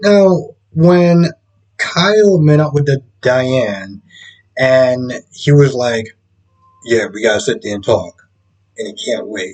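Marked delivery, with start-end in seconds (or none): 6.8-8.3 little put-on manly voice, low and quick. Retelling what Kyle said about talking with his mother, imitating Kyle's manly voice. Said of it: "use your little manly voice".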